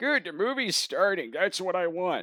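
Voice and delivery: put-on voice of an elderly woman. Retelling what an old lady in the back said as the movie started, imitating an old lady. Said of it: "the old lady in the back uh, goes".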